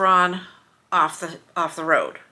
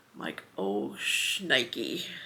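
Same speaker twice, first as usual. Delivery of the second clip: ordinary talk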